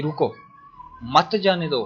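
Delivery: रुको, then a pause before मत जाने दो.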